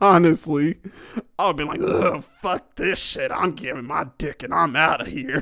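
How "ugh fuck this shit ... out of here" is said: put-on country western accent. Imagining how he would have reacted in that scene, country western accent. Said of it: "I would have sounded like a fucking country western type".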